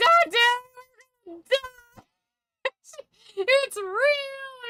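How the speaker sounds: put-on sobbing, frantic, very high, real drawn out. Retelling how she reacted while he egged her on, imitating her screaming and crying. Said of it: "She's screaming, she's crying".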